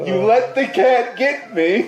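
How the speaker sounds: very loud, shrill, high, angry yell in character. Playing a character who yells at a companion for letting the cat get him: yelling in character. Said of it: "I'm actually going to yell at Graham".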